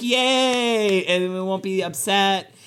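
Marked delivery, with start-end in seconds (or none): 0.0-1.0 put-on cheering. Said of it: "everybody will be like".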